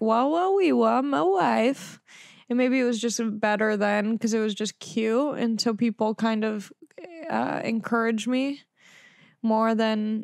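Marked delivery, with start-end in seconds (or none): 0.0-2.0 lazy, slow, drawn-out character voice, "wife" stretched out. Showing the Borat impression done in fifth grade: Borat impression. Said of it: "this Borat impression".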